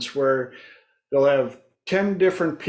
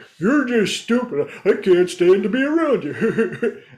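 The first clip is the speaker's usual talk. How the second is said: higher voice, giggling and cracking up mid-sentence; 6 semitones higher, 3 dB louder than usual. Retelling what people say when they try to insult them, imitating someone laughing while talking. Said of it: "they'll start cracking up".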